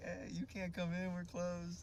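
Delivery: put-on chirpy, teasing, bubbly, cheerful voice. Retelling what she said at the gym door: imitating a bubbly voice. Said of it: "smiling all bubbly".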